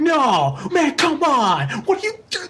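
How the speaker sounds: outraged outburst.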